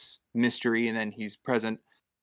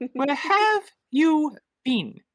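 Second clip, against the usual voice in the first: mock screaming, higher and louder; 5 dB louder than usual. Imagining a character scolding someone for missing curfew: imitating Mrs. Beaver screaming. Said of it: "she starts screaming at him".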